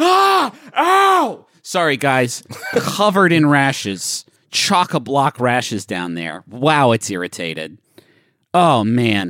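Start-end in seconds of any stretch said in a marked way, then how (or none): 0.0-1.4 high, loud yelp of pain. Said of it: "you sit down in the breakfast nook and you go".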